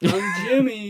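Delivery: loud declaring tone. Retelling a dating show moment, doing an impression of Jimmy. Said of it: "That's a good impression".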